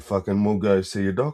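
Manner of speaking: put-on pushy, insistent delivery. Retelling pressing a sick friend to see a doctor: imitating being pushy. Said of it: "pushy and say".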